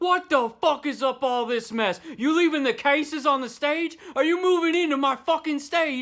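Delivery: put-on thick British accent. Retelling a sound guy scolding the band: imitating a British accent. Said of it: "He's got a thick-ass British accent".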